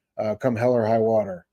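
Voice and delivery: plain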